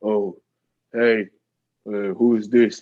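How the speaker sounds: a real deep-voiced man's voice. Telling of walking in unannounced, imitating a deep-voiced dude on the couch. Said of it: "this real deep voiced dude".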